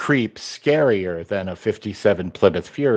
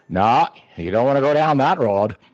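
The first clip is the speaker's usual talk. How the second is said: put-on fully committed, immersive Maine accent; 4 semitones higher than usual. Telling how he cracks up his kid on the phone, in Gwynne's Maine accent. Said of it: "does completely immersive Maine accent".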